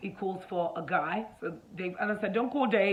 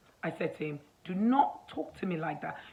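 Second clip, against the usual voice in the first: ordinary delivery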